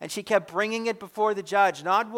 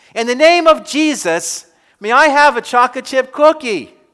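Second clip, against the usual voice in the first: put-on loud little-boy shout at the top of his lungs; 4 semitones higher, 13 dB louder than usual. Storyteller acts out a little boy standing on a shopping-cart seat, retelling a loud shout. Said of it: "he shouted out in his loudest voice".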